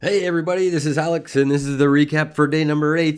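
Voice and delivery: fake cheerful voice. Opening the recap for day number eight, faking happy. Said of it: "if I sound pretty happy right now, that's 'cause I'm faking it".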